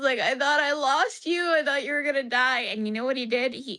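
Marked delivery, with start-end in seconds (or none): 0.2-2.6 high, pleading, crying through sobs. Retelling what was said to a small pet while sobbing: retelling own sobbing words. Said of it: "I was profusely sobbing".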